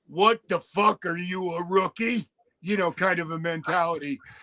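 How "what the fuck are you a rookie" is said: rough, raspy, hoarse rasping voice. Retelling a man's reaction when things went wrong, in a raspy voice. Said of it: "In that raspy voice".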